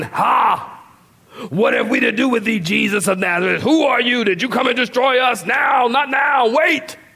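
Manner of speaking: theatrical, put-on demonic voice. Explaining a Greek word, acting out the demon's line in a demonic voice. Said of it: "the demon is with this demonic voice".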